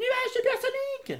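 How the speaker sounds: very high-pitched, loud shouting. Calling out for the supersonic cloud to fly to the castle: shouting. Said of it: "Arrête de crier comme ça !".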